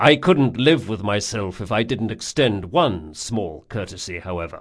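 plain

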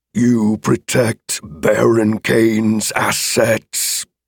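words growled through teeth, dragon voice. Reading the dragon's reply to the sword wielder, in a growling dragon voice. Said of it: "The dragon's voice came out in a growl, chewed up in dagger-like teeth".

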